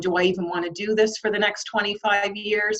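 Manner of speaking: ordinary delivery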